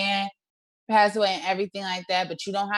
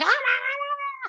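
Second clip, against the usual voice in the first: very high mock screaming. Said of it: "She made it seem like Julie was, like, screaming".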